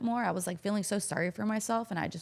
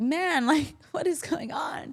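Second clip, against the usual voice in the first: put-on loud, high sobbing with drawn-out words; 8 semitones higher, 5 dB louder than usual. Retelling sobbing while watching a retirement on an iPad: imitating own sobbing. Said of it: "I'm sobbing, and I'm just like".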